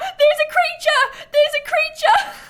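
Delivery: shrill shout, pitched way up, loud. Retelling a man yelling through the window after seeing a possum, retelling a yell. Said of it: "he was like yelling in the window".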